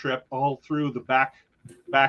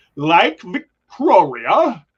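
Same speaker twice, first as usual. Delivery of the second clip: booming put-on Australian accent on "Victoria"; 4 semitones higher, 9 dB louder than usual. Trying to pronounce a lake's name for another speaker, Australian accent. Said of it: "It's got that Australian accent".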